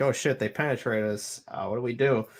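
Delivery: ordinary delivery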